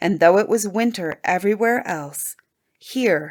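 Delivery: ordinary delivery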